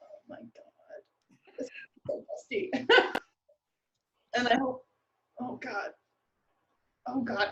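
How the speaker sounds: whispered muttering under the breath. Playing a character who is about to unlock the dusty shop, muttering under breath. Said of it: "I'm just kind of like under my breath".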